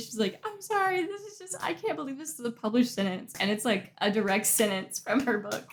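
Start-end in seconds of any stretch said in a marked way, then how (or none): 0.4-3.3 high voice caught between crying and laughter. Retelling how a reader on TikTok reacted to a book quote: imitating someone crying and laughing. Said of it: "crying and laughing".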